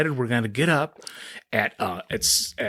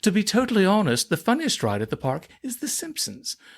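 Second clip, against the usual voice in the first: high, swooping, odd put-on British accent; 8 semitones higher than usual. Quoting what he told you during your talk, in a funky, weird british accent. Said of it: "in a funky, weird British accent".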